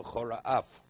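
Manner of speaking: V'chora and Af said as two separate words.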